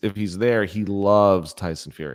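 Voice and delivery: sarcastic tone.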